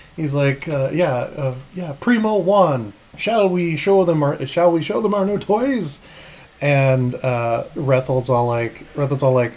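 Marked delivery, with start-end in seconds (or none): 0.9-6.0 strong put-on English accent, pitched up. Voicing a character in the game: very English accent. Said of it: "it's hella English".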